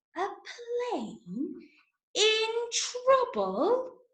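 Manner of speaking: very high pitched, really slow, drawn-out reading. Showing listeners different ways to say one phrase, saying it really slow. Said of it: "You might say it really slow".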